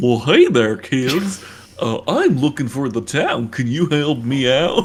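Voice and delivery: slow, drawn-out, cartoon-style voice. Playing a wolf greeting kids while asking for the town: Goofy voice. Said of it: "And he talks like Goofy".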